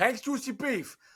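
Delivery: put-on New York accent, pitched very high. Repeating a sandwich shop's name, trying it out in a New York accent. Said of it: "that's my like New York".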